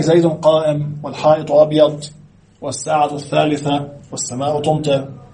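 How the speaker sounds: normal talking voice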